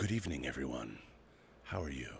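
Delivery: very quiet, very low, hushed ASMR voice. Joking about spending the entire night talking in an ASMR voice. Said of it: "talking in my A S M R voice".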